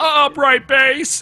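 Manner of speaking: shrill, high-pitched scream. Retelling a classroom laughing fit, imitating Brian Altano screaming. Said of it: "me thinking of Brian Altano screaming".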